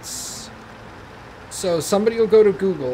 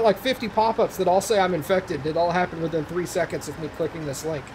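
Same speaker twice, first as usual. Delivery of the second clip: ordinary delivery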